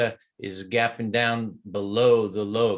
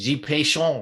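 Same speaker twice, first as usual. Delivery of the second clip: fake French accent, pitched up; 5 semitones higher than usual. Talking through stock charts, dropping in a put-on French accent. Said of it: "that French accent came out early".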